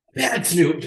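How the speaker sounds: high, playful mock scolding tone.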